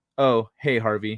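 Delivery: dismissive, offhand manner. Retelling a reply to a super chat: imitating a dismissive greeting. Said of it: "Like, dismissively".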